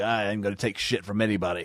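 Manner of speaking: put-on gnarled voice. Describing a man's voice and acting out what he says: imitating a gnarled voice. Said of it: "got like the gnarled voice".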